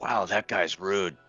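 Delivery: aside stage whisper. Aside to another character during a title confrontation, stage whisper. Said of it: "stage whisper to Delaney".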